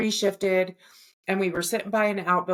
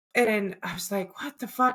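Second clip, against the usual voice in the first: ordinary delivery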